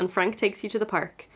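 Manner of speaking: normal talking voice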